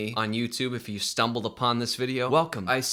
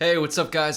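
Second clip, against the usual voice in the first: outright yelling, high and loud; 5 semitones higher, 4 dB louder than usual. Speaker greets the audience at the start, yelling. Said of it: "I don't know why I'm yelling".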